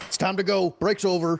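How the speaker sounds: loud, high-pitched yell. A player says what their character will yell on arriving, yelling out. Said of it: "I will yell out".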